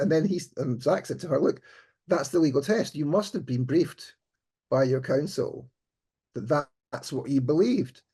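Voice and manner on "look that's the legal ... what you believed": ordinary talk, nothing marked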